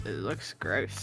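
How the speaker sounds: muttered, very soft and low. Showing how they privately judge a jello cake: muttered under breath. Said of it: "Just like".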